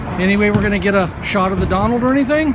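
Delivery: ordinary delivery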